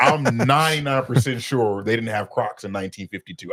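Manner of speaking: ordinary talk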